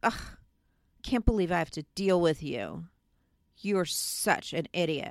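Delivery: low, ornery, pompous, dismissive voice. Describing how some people talk, the speaker imitates their dismissive tone. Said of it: "it's this dismissive".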